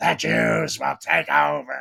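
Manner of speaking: slow, swooping, drawn-out dark evil tone. Retelling how someone talks in a voicemail: imitating Mel Gibson's evil tone. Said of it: "He goes into this, like, evil tone".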